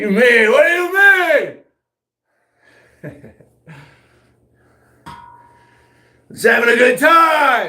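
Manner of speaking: very high, loud hollered yelling, drawn out. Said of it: "Why are you yelling at everybody".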